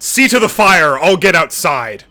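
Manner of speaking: very loud, high, authoritative barking voice. Narrating a game, the speaker voices a familiar figure barking in an authoritative tone. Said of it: "bark out in an authoritative tone".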